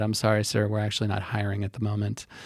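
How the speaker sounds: mock coolly sarcastic, overly polite, calm delivery. Retelling own reply to someone who threatened their job: retelling own calm sarcastic reply. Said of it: "I just look at him calmly and I said".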